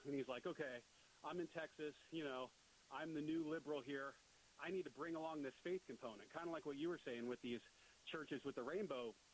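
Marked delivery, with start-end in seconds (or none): none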